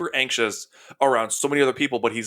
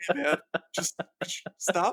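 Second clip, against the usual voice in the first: character voice for a dog; 6 semitones higher, 5 dB quieter than usual. Putting words to a dog's look at someone too worked up: voicing the dog's thoughts. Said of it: "the added effect of him going like".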